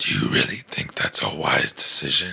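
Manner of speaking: very low-pitched, scrambled scrambler voice. Showing how the last movie Batman sounded: Ben Affleck Batman scrambler voice. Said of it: "he sounded like this all the time".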